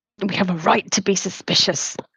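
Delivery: low mutter, under the breath. Saying a remark quietly during a conversation: muttered under the breath. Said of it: "Under my breath, like".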